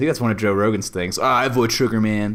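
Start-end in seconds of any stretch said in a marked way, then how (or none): 1.2-2.3 grunted, ending on a tossed-off man. Imitating Joe Rogan talking about avoiding sugar: Joe Rogan impression. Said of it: "my best Joe Rogan impression".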